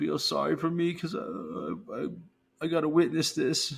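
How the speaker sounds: soft, high, self-pitying pleading tone. Complaining about a newsreader who wants sympathy: mocking the newsreader's self-pity. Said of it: "mocking the newsreader's self-pity".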